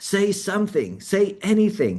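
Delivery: very high, slow, drawn-out, swooping yell. Retelling how the tutor at the back of the church urged them: imitating a tutor yelling. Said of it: "the church person at the back of the church yelling".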